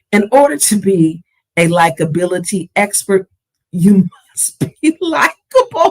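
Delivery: laughter breaking into the words, swooping pitch. Giving a closing reminder to the audience, laughing while talking.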